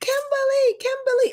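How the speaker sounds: eager high-pitched calling.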